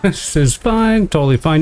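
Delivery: upward lilt, ending on a high pitch. Playing a game as things go wrong, saying it's fine: upward inflection. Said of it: "the upward inflection of my voice".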